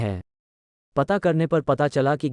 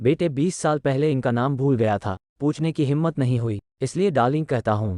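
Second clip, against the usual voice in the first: ordinary talk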